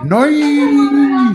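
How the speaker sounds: very high, drawn-out, impressed shout. Voicing a character who sees a teammate's move: in-character shout. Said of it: "he just shouts out".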